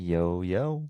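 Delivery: low-spirited, a little down. Podcast guest greeting the hosts at the start of the episode; sounding down. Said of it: "you sound a little down today".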